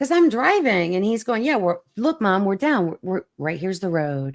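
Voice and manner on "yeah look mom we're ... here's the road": mock super calm put-on voice. Retelling her son reassuring her while she drove, imitating his super calm voice. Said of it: "he was all calm, like super calm".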